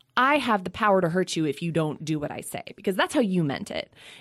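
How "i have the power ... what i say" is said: plain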